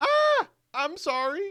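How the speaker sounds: very high, insincere, offhand little "sorry". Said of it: "It's like".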